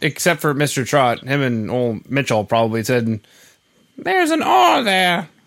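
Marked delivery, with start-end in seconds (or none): 4.0-5.2 put-on English accent, higher pitch. Imitating people correcting how Melbourne is said: Monty Python sketch voice. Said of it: "You sound like a Monty Python sketch".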